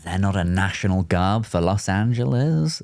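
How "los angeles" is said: hammy, stagey, put-on theatrical character voice. Saying "Los Angeles" like a guy from the show, What We Do in the Shadows voice. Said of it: "I said it like that guy from uh, What We Do in the Shadows".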